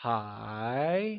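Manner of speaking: hi climbing from mid to high pitch. Teaching Mandarin tones, modelling hi with a mid-rising tone. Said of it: "It is said with a mid-rising tone".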